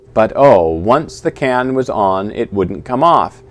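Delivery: plain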